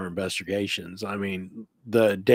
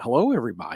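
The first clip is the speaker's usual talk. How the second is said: put-on small, girlish little girl's voice; 3 semitones higher than usual. Retelling a late-night walkie-talkie recording: imitating a little girl's voice. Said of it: "a little girl's voice going".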